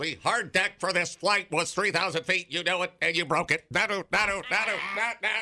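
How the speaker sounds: high-pitched alien commander voice. Telling a story about aliens banished to Earth, in an alien leader voice. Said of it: "And the other alien leader goes".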